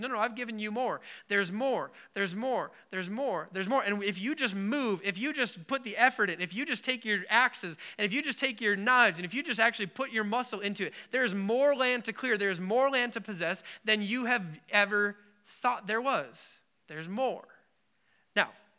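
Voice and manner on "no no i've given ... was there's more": ordinary talk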